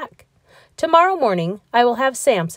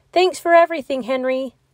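high-pitched calling out, as across a distance; 6 semitones higher than usual. Leaving on a whale, thanking the one left behind, called out. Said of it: "Lars called".

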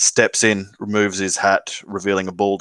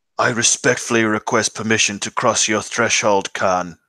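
put-on aged, husky older voice, intoning. An unfamiliar voice outside intones the ritual words to enter, older, husky voice. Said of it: "older, husky voice from outside".

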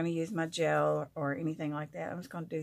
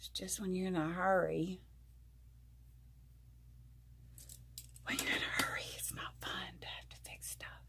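hushed whisper, much quieter than normal; 10 dB quieter than usual. Speaker talking in the middle of the night while everybody's asleep, whispering. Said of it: "I'm whispering because everybody's asleep".

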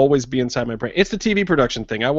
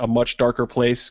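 ordinary talk

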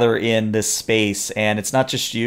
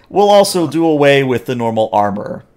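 loud, as sarcastic as possible; 4 semitones higher, 4 dB louder than usual. Voicing a noblewoman announcing the duel's rules to the crowd: very sarcastic. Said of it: "she says that as sarcastically as possible".

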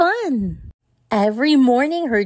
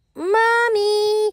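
long, high, drawn-out, carrying shout; 9 semitones higher than usual. Narrator reading a children's story, Peppa calling for Mummy: Peppa shouting. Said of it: "shouted Peppa".

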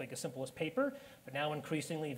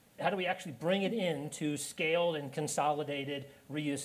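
ordinary talk

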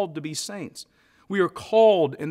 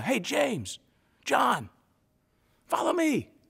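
mock hailing yell, drawn-out and swooping; 8 semitones higher, 3 dB quieter than usual. Acting out a call to James and John over the waves: imitating Jesus yelling out. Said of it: "he just yells out".

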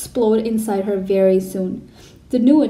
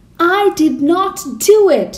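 very slow, high, loud scream, drawn out word by word; 8 semitones higher, 6 dB louder than usual. Matilda, accused by the Trunchbull, screaming. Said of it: "Matilda screamed".

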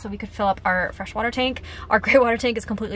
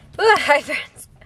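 winded, out of breath; 5 semitones higher, 5 dB louder than usual. A van-life vlogger greets viewers after tidying the cab: out of breath. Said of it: "I am out of breath".

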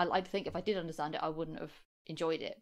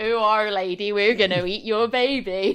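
put-on southwestern English accent; 5 semitones higher, 15 dB louder than usual. The speaker quotes the line in a West Country accent. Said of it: "west country accent".

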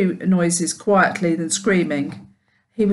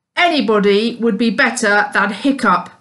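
mocking, sneering tone; 2 semitones higher, 4 dB louder than usual. A narrator reads a boy's taunt about another boy, sneering. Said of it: "sneered Snotface Snotlout".

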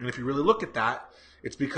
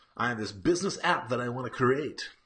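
goofy, dumb-sounding, stupid put-on voice; 4 dB quieter than usual. Retelling a man at an event pitching his app idea, in a stupid put-on voice. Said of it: "I'm just creating a stupid voice".

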